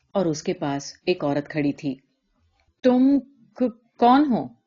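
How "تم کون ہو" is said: halting, stumbling, high, loud stammering. A man asks a woman standing beside him who she is, stammering. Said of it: "اس نے ہکلاتے ہوئے پوچھا".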